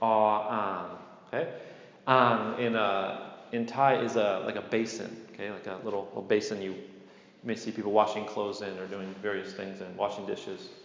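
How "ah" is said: long level mid tone, then long low tone. Showing learners how to say Thai letter names: long mid then long low tone. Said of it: "You gotta hold that a little bit".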